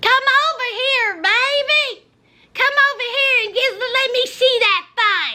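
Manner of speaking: scratchy, thick-throated country twang and drawl. Retelling a woman overheard on a phone call: imitating scratchy country twang. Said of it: "in a very scratchy, thick throat, country twang".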